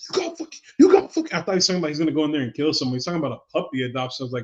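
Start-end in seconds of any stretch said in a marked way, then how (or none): 0.1-1.3 very high, shrill, raging yell. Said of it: "when he was yelling at the mirror".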